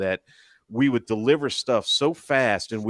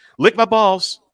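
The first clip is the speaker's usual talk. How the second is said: very high, loud, friendly tone; 11 semitones higher, 8 dB louder than usual. Speaker retelling how a man would greet people: retelling a very fast line. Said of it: "he'd say it so fast".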